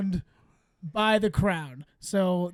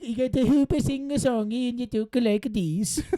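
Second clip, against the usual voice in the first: fake Belgian accent, higher; 3 semitones higher than usual. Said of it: "Hit me with your best Belgium accent".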